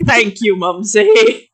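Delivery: mocking, ironic tone.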